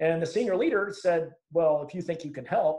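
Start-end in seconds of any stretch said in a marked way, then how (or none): 1.5-2.8 mock scornful, derogatory tone. Retelling a senior leader's reply to a young sergeant: imitating a derogatory tone. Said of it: "in a very derogatory manner".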